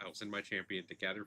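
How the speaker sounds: ordinary delivery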